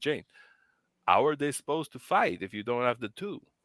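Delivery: heated, passionate put-on French accent. Retelling a man's question to her mother, the speaker imitates a French accent. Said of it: "he has a French accent".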